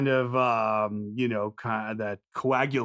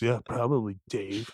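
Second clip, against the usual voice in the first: scornful, contemptuous tone. Teasing dave for not watching any as an adult, scornful tone. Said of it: "You hear the scorn in my voice?".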